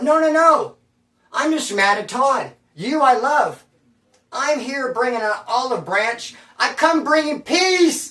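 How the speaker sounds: placating, high, drawn-out yell. Retelling throwing the knife down as the girls ran: imitating own past yelling. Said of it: "I yelled as they ran out the door".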